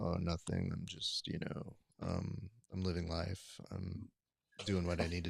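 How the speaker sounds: put-on deep bass voice. Imitating a friend's low speaking voice: Prince-like voice. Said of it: "Prince-like voice".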